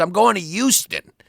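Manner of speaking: put-on Queens accent, with a Y sound added in "Houston". Showing how he pronounces Houston with a Y in there, imitate his trash bag Queens accent. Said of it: "with his trash bag Queens accent. He he throws a Y in there".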